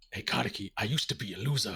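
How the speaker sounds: deep, put-on ghoul creature voice. Joking about what the ghoul voice did not say: mock ghoul voice. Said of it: "the ghoul voice was not like".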